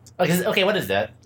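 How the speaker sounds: normal talking voice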